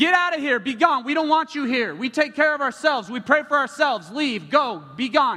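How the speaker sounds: loud, high-pitched shouting.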